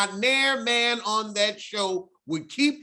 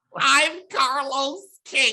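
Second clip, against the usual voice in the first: high, nasal announcer voice; 5 semitones higher, 4 dB louder than usual. Trying an impression of a podcast host's nasal voice: Carlos King impression. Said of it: "I don't think I can do".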